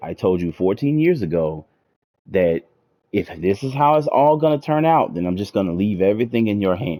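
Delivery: plain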